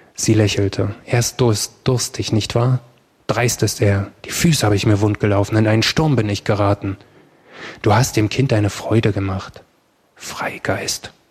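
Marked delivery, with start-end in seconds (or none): 10.2-11.1 whispered under breath, much quieter. Narrator voicing a man answering a woman, whispered to himself. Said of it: "flüsterte er vor sich hin".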